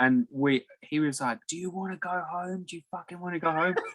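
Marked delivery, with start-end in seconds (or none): 1.5-3.8 mock scolding, hectoring, screaming outburst, pitched up. Retelling how someone screamed at the workers to go faster: imitating someone screaming. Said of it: "he was screaming at us to go faster".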